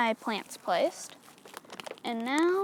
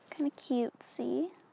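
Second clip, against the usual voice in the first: voice cracking on a note, slipping into whisper. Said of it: "my voice went really weird on that note".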